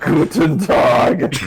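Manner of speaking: cruel, relishing sadistic tone. Correcting a friend's take on a germany character greeting: sadistic cruel-sounding voice. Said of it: "just fucking sadistic and cruel sounding".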